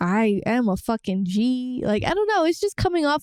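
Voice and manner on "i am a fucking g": put-on cocky tone, much slower. Speaker describes this guy's outwardly cocky attitude, quoting him; imitating a cocky guy. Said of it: "But this guy's like".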